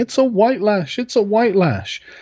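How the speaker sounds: play-acted frantic, alarmed, high-pitched screaming cry. Retelling a commentator's reaction after the election: imitating Van Jones screaming. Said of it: "Van Jones running around screaming".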